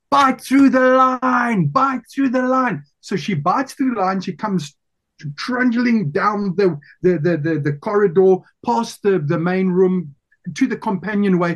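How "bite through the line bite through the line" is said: acted-out shout, pitched much higher. Retelling what he shouted after a hook went through her finger, retelling own shout. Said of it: "Then I shouted".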